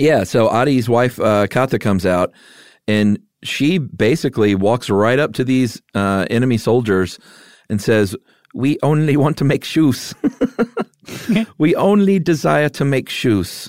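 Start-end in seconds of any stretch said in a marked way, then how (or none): 8.5-13.7 put-on German accent, higher. Retelling a woman's words to enemy soldiers: Colonel Klink voice. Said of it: "Why are you talking like Colonel Klink?".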